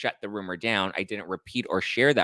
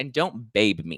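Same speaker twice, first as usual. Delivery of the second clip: put-on angry scolding, slow, raised voice; 2 semitones higher than usual. Retelling a confrontation where he got in the speaker's face: imitating someone raising his voice. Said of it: "starts raising his voice at me".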